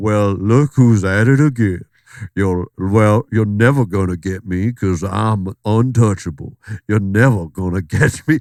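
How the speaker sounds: put-on laid-on, taunting Georgia accent. Imitating an actor taunting in character: Kevin Spacey's House of Cards Georgia accent. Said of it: "a whole Georgia accent".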